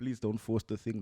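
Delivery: plain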